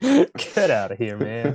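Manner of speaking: put-on American accent, swooping pitch. Brushing off the other speaker during banter, American accent. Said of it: "That's another American accent".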